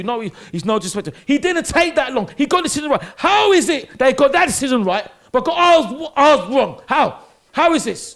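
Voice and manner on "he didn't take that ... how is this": mad, angry shouting rant. Talking to the other speaker after a red card decision, angry shouting. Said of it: "I'm mad".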